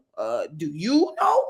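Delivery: slow, put-on petty sarcastic tone. Retelling how coworkers answered on calls: imitating coworkers being sarcastic. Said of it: "just being real sarcastic and being like".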